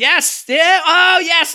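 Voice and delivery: mock elated cheer, very high and very slow. Retelling own fist-pumping reaction to a story moment: retelling own excited cheer. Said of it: "I literally pumped my fists and went".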